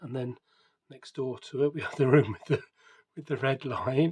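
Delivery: talking broken up by laughter. Showing and describing a building's decoration, laughing while talking. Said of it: "sorry for laughing".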